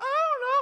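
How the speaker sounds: very high, anxious, cracking voice, with know stretched out. Acting out Philip answering Jesus: imitating Philip's voice going high and cracking. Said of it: "cracking a little bit".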